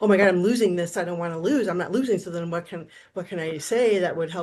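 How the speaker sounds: usual speaking voice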